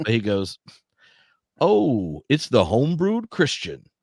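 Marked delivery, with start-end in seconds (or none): 1.6-3.8 clumsy put-on man's voice, high and swooping. Retelling a party story, the speaker voices Tripp's bad impression attempt. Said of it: "this is Tripp's bad attempt at doing his voice".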